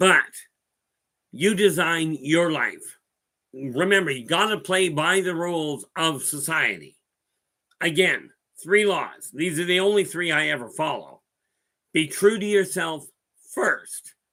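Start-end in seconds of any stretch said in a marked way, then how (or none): 11.9-14.1 voice breaking and cracking mid-line. Speaker listing personal rules to follow, voice cracking. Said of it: "My voice cracked".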